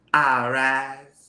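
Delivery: unique cartoon character voice with drawn-out rise. Showing a voice created for a character on an animated show: unique animated character voice. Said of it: "Would you like to hear 'em?".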